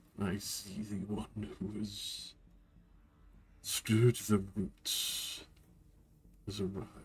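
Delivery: put-on cracking, groaning voice like creaking old timber. A figure transmuted into the forest speaks, in a deep cracking wooden voice. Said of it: "A very deep, cracking voice. It sounds like wood groaning".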